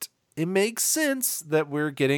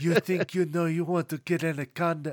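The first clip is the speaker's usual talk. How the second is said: high, soft, put-on Paraguayan movie-style accent. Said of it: "I wish I could do his accent".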